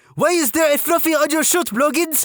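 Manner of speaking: put-on French-Canadian accent. Retelling a sergeant questioning a recruit, imitating a French-Canadian accent. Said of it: "Imagine a female French-Canadian sergeant with this accent".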